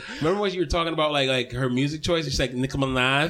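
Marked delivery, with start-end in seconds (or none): 2.5-3.3 mock girlish lisp, pitched lower. Answering how they imitate the girl with the lisp: imitating a girl's lisp. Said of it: "we still imitate the girl with the lisp".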